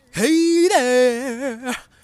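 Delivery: high, loud, stretched-out delivery. Recording a voice audition for a cartoon role, in Chowder pig voice. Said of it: "here's my audition for the pig from Chowder".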